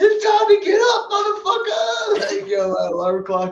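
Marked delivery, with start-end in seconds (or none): 0.0-2.4 shrill, high, loud bellowing shout. Acting out an alarm clock that wakes you up: shouting alarm-clock wake-up call. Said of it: "your shouting voice".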